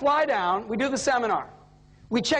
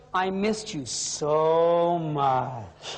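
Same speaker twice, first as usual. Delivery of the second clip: mock, very slow, overdone lovey-dovey gushing sweet talk; 8 semitones lower than usual. Retelling a husband's phone call to his wife: imitating someone laying it on thick. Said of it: "He starts to milk it".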